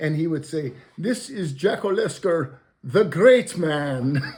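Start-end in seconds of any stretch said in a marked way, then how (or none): 1.0-4.2 put-on Indian accent. Retelling how a CEO friend introduced him to investors, imitating V.S.'s Indian accent. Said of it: "with his Indian accent".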